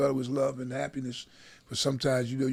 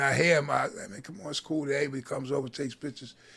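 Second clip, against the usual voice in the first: ordinary talk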